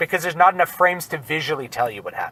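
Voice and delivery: normal talking voice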